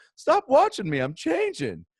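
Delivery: funny put-on voice, very high, loud and swooping. Retelling a joke told to kids, voicing the traffic light: put-on traffic light voice. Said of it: "I try to do a voice for this one".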